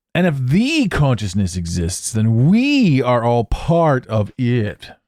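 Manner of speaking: wildly varying, swooping, sing-song inflection. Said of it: "Do you like my inflection there?".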